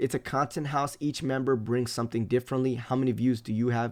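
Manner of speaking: normal talking voice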